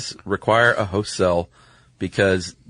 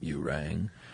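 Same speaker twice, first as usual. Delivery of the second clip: put-on vocal fry, lower pitch and quieter; 5 semitones lower, 14 dB quieter than usual. Answering a mention of Lurch from the Addams Family: Lurch voice. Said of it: "you do a pretty good Lurch".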